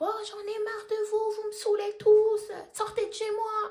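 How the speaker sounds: shrill man shouting, high-pitched, bellowing at full volume. Speaker acts out the neighbor shouting at night while on the phone with dad, retelling a man shouting. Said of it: "Il commence à crier, il crie".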